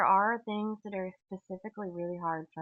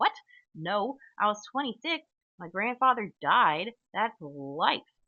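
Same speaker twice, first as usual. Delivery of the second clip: mock, really defensive, raised voice; 3 semitones higher, 5 dB louder than usual. Retelling what a grandpa said in a line: imitating someone defensive. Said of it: "not angry, angry, but just, like, really defensive".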